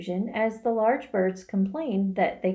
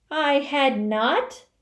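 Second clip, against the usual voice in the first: sharp, very angry, high cry; 5 semitones higher, 4 dB louder than usual. Reading the story aloud, narrator gives the mouse's reply to Alice as a sharp angry cry. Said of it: "cried the mouse sharply and very angrily".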